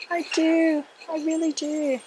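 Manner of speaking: very high, slow, unhurried voice. Holding up a plant like a bouquet, pretending to be a bride. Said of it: "I'm mocking, pretending I'm a, a bride".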